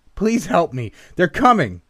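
very high, loud, swooping pleading, begging yell. A man beats on the door, begging the narrator for help, yelling out. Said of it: "he yelled out from the other side of the door".

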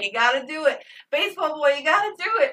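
emotional, high, rising screamed voice. Retelling urging a movie character at the computer: imitating own screaming. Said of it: "screaming at the computer at this point".

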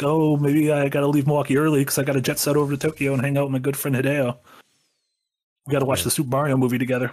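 smug, boastful, big-timing showing-off voice. Mocking a friend's boast about a trip, Nick impression. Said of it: "That was my Nick impression".

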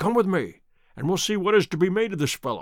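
ordinary talk

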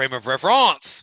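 very loud, put-on French accent. Speaker retries a phrase that didn't come out right, in a french accent. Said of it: "I'm just going to speak in a more French accent".

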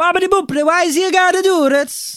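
Italian aunt voice, pitched way up. Imitating Italians walking by at the Leaning Tower: impression of Italian aunts. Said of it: "doing an impression of all my Zias".

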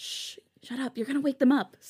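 high, carrying stage whisper. San telling another to shut up before they wake the sleepers, whispering. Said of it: "San whispered".

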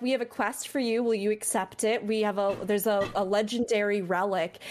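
ordinary talk

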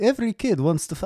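vampire voice with Transylvanian accent. Acting out what someone would say, you turn into an accidental Dracula voice. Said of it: "why am I Transylvanian?".

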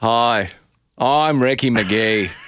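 put-on Australian accent. Opening a bit as Ricky Megee, in a Ricky Megee Australian accent. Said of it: "Your Australian is not bad".

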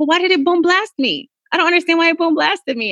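put-on high, puzzled little girl voice.

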